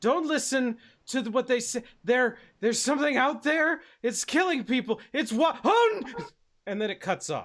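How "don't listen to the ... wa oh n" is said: high, loud, winded, panting through the words. Voicing a recorded distress call from a colony administrator: out of breath, panting. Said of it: "sounds like they're kinda out of breath. They're sort of panting".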